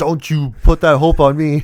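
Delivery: loud, very slow, every word drawn out. Quoting the wheelchair scene: imitating Ricky Bobby. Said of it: "And he goes like".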